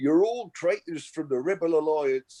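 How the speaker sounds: put-on Liverpool Scouse accent, pitched a bit high. Imagining a famous actor speaking in a dialect, James Earl Jones in Scouse accent. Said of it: "called Scouse".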